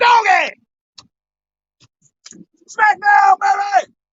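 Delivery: high, loud, triumphant shout.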